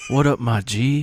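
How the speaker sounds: terrible, badly done put-on Louisiana accent. Imitating a movie cop's terrible accent: imitating Steven Seagal's bad accent. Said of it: "He had the worst accent I've ever heard".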